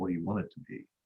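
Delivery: hushed, very quiet, soft confiding tone. Telling an old joke, acting out a risk analyst answering a question: soft voice. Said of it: "talks to you in a soft voice and says".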